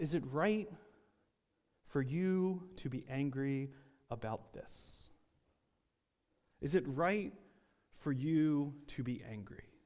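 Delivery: put-on calm, quiet voice. Retelling God's question to Jonah: quiet, very calm voice as God. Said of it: "in what was probably a quiet and a very calm voice".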